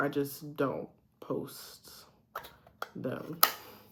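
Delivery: soft unvoiced whisper.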